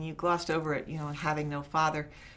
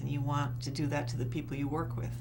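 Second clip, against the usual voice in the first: ordinary talk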